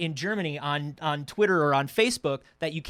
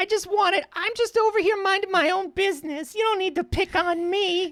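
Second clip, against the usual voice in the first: put-on timid child voice, pitched higher. Picturing Bing as a little kid being picked on: meek little kid voice. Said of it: "a little Archie thing. Where he's just like".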